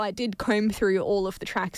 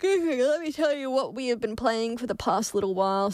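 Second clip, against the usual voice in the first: speech spoken while yawning; 4 semitones higher than usual. Telling listeners what they have been playing lately, yawning while talking. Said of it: "Sorry, I'm yawning".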